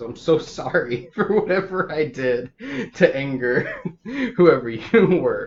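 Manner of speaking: speaking through laughter.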